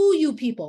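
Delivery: stern, loud challenging voice. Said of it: "asked the question very sternly".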